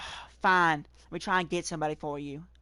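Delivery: put-on southern drawl accent. Retelling the reply to a request for help, in a southern accent. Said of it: "I'm not exaggerating the southern accent here".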